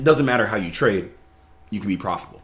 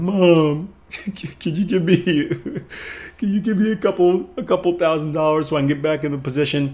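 mock high, tearful, crying voice, begging through sobs; 8 semitones higher than usual. Retelling a story of a trader asking his mom for a loan: imitating someone crying and begging. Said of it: "crying and begging his".

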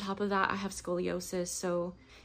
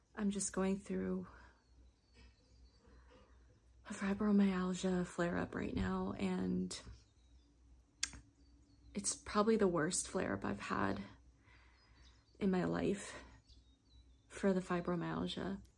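talking particularly quietly, soft-spoken; 5 dB quieter than usual. Speaker apologizes for talking quietly during a flare-up, talking particularly quietly. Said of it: "I'm sorry if I'm talking particularly quiet".

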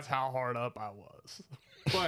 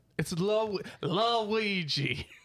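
fake French accent, higher pitch; 6 semitones higher, 4 dB louder than usual. Claiming a Ouija board is French: put-on French accent. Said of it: "the accent, the accent".

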